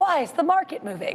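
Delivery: goofy, funny, silly put-on voice. Giving viewers a trading update, voicing a viewer's question in a silly put-on voice. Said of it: "I don't know why I use that voice".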